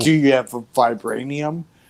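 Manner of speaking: ordinary talk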